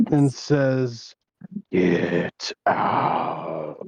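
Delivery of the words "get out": put-on eerie, haunting voice, low. A character, deciding the voices outside shouldn't come in, does a spooky voice. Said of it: "his best uh, spooky voice imitation".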